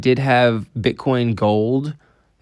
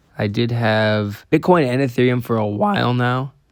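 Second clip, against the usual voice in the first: voice cracking and breaking. Updating viewers on weekly investments, voice cracking. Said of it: "another voice crack".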